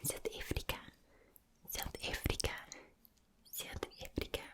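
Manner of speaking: mild, toned-down South African accent. Showing an accent after introducing it: toned-down South African accent. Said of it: "Now for the South African accent".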